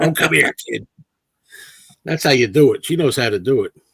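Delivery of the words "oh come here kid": voice worn down like a smoker's. Recalling a woman calling you over for a photo, imitating a cigarette voice. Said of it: "She had a like cigarette voice".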